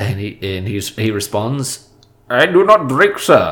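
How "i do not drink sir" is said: put-on Indian accent, higher pitch. Retelling a film's party scene, answer the offer of a drink as Peter Sellers doing an Indian man. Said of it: "that's me doing Peter Sellers doing an Indian man".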